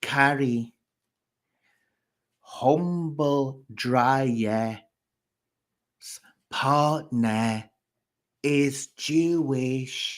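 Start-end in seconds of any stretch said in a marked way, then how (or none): 2.4-10.2 very slow, drawn-out, spelled-out explaining tone. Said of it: "let me say it slowly for you".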